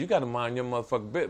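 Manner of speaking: mock grave, stern, menacing, threatening tone. Retelling what he told the worker: imitating his own stern threatening tone. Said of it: "I said it in such a tone".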